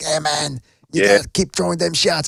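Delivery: strung-out, rough, creaky, raspy addict voice. Imitating a boxing trainer shouting from the corner: Lou Duva crackhead voice. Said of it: "he sounds like a crackhead now".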